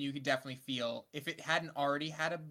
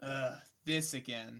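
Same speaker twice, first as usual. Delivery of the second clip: mock weary sigh, lower pitch; 2 semitones lower than usual. Retelling how John reacted while Shin was in pain, imitating a weary sigh. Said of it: "just sighing".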